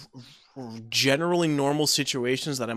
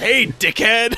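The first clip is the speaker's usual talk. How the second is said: put-on very loud, gruff old codger holler; 8 semitones higher, 9 dB louder than usual. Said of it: "Slams open the door and says".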